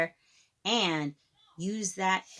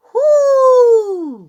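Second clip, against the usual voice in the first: very loud, shrill, high whoo, long and stretched; 19 dB louder than usual. Reading aloud a bigger exclamation mark that needs to be really loud, very loud 'whoo'. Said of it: "We got to be really loud with this one".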